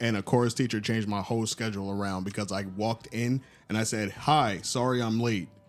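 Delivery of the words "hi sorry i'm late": very slow, deep, low baritone voice. Retelling walking late into a chorus room: imitating own baritone voice. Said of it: "That baritone".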